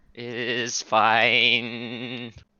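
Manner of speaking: voice juddering and shuddering, vibrating. Answering if they are good after eating cookies: intense vibrating voice. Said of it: "That is some intense vibrating".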